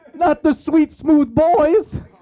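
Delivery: put-on tearful wail. Retelling a priest crying outside the burning cathedral: imitating priests crying. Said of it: "actual group of priests crying".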